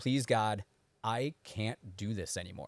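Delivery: heartfelt, genuine, pleading tone. Retelling a morning prayer, feeling it again: re-enacting a heartfelt plea. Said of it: "as genuine as I said that morning".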